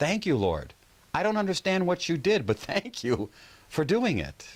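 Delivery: loud, very high voice. Recounting thanking the lord after a miracle, retelling speaking loudly. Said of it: "So I say in a loud voice".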